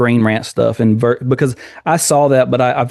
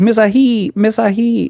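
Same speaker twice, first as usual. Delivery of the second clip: put-on very high, slow, drawn-out movie-girl voice; 10 semitones higher than usual. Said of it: "the way she says".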